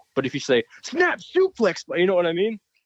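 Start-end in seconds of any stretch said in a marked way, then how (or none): 0.8-1.8 pumped-up, energetic, very high-pitched wrestling call. Showing how to call a wrestling move as a fan would: energetic wrestling call. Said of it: "Make it energetic".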